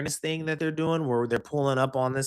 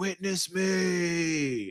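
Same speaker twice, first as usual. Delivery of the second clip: battle cry, stretching the word me; 4 semitones higher than usual. Joking that people will fight over water: Mad Max war cry, quoting the movie. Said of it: "we about to be Mad Max".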